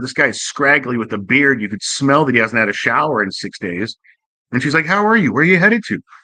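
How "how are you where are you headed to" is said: very calm, soothing, gentle voice, slightly pitched up. Retelling how a lady spoke to a passenger, imitating her very calm, soft voice. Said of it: "Very calm, very soft".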